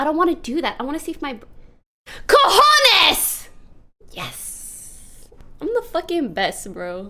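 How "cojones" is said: very high, loud, thrilled, excited scream. Finally remembering a word while chat waits, excited scream. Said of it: "Who has ever screamed balls that excitedly?".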